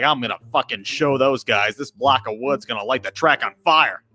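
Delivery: put-on angry, boastful voice. Retelling a friend's boast on race day: imitating an angry friend. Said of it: "He's all pissed off".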